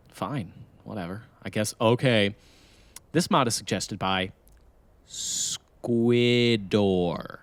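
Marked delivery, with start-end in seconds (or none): 3.1-7.2 each syllable split apart deliberately, slow. Redoing the mod announcement after being told to separate it more, separated syllables. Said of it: "you got to separate it more than that".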